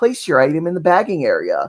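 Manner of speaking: sing-song prerecorded automated self-checkout machine voice. Retelling a self-checkout story, imitating the self-checkout machine voice. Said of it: "and she goes".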